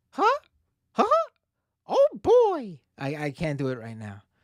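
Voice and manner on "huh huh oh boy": very high pitch, slow and swooping. Speaker offers to do an impression, then tries it: Mickey Mouse impression. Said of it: "my Mickey Mouse impression".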